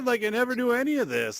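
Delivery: very high, amazed squealed exclamation.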